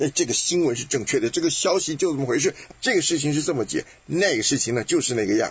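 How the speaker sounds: confident, fast, know-it-all smooth-talking patter, Beijing-style.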